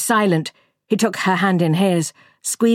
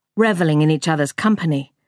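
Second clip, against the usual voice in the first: usual speaking voice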